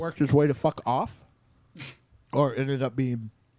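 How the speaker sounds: talking with mouth full, chewing. Talking mid-bite while a listener struggles to follow, talking with mouth full. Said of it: "Can you s- say that again without any food in your mouth?".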